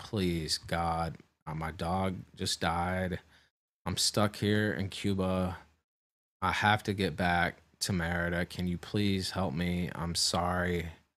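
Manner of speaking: acted, slow, desperate, really pleading begging voice. Retelling begging to be let onto the flight: imitating own begging. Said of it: "And I literally begged".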